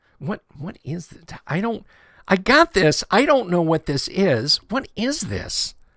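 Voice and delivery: high, baffled impression with wide-swinging pitch.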